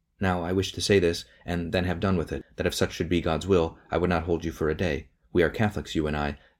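ordinary delivery

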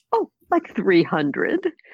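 very proud, boastful, sing-song voice. Retelling their answer to a man urging them to write a book, retelling a proud answer. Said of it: "very proudly".

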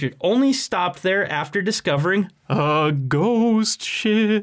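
eerie, high, spooky, put-on ghost voice. Speaker tells the other speaker their boat story, in a spooky ghost voice. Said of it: "I'm not impressed by your ghost voice".

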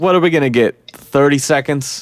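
ordinary talk, nothing marked

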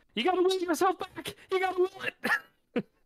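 loud fast yelling. Voicing Dane as the ground cracks and everyone runs, yelling as Dane. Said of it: "And Dane just yells out".

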